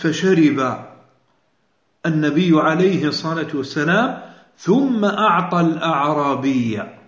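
ordinary talk, nothing marked

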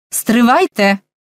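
calling out, crying out. The major calls out to Colhoun, not daring to turn his back; calling out. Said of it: "гукнув майор".

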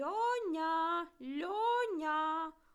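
loud, high parrot cry with one word drawn out. A parrot flaps its wings and calls out a name, loud shout. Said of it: "голосно вигукнув папуга".

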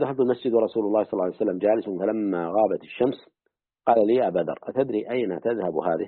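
normal talking voice

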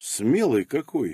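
soft, dry, wryly ironic tone. Alexander comments on the narrator's complaint about the training, ironic. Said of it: "иронично приподняв бровь".

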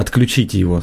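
ordinary delivery, nothing marked

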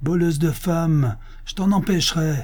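keyed-up, high, cried-out delivery. Reading a man's retort to the woman taking her away, shouting. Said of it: "cria l'homme".

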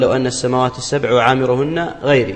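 ordinary delivery

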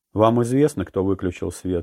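ordinary delivery

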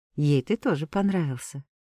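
ordinary delivery

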